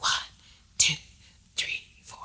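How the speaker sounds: steady, breathy whisper. Leading others to whisper the counts while snapping fingers, whispering. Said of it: "have a whispering tone like this".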